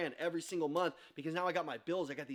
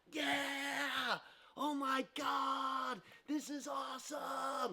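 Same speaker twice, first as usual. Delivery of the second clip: put-on very slow, high, thrilled kids' cheer, god stretched; 8 semitones higher, 4 dB quieter than usual. Retelling how kids reacted to getting cookies: imitating excited kids. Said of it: "the kids are going nuts".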